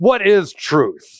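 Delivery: put-on snide, haughty, sarcastic, arrogant tone. Retelling a man looking Jesus in the eyes: mock-sarcastic, arrogant question. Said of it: "Almost sarcastic or arrogantly".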